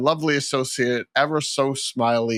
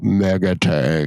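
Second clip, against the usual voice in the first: affected put-on deep voice, pitch dropped; 6 semitones lower, 4 dB louder than usual. Describing something that goes 'Mega Tank', in a put-on deep voice. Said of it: "it's like this deep voice".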